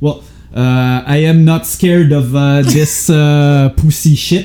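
put-on strong Quebec accent. Quoting a man the speaker calls a caricature, in a strong Quebec accent. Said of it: "he says it in like the most Quebec accent".

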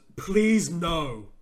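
mock-yelled, acted-out shout. Speaker recalling what somebody yelled out during a move, retelling a yell. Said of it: "somebody yelled out".

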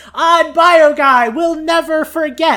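very high, loud, squeaky mechanical robot voice. Quoting a robot game character's lines: high-pitched squeaky robot voice. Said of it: "high-pitched, squeaky, robotic voice".

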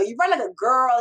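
acted-out yelling. Speaker quotes a man who used to make them cry: retelling a yell. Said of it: "He's yelling at me".

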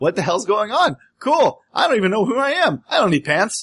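dazed, carefree, just-woken-up voice.

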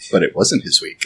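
very deep, dramatic storybook narrator voice. Friends joking about whose week it is to get the beer, freeze-frame narrator voice. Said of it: "Freeze Frame Narrative voice".

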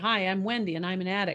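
normal talking voice

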